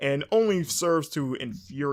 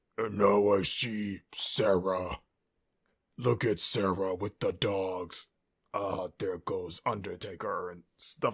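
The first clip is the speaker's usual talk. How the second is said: deep, creepy, very slow throaty voice; 6 semitones lower than usual. Imitate the unknown culprit behind the private footage of sarah, in a put-on deep throat voice. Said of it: "talking in like this deep throat voice thing".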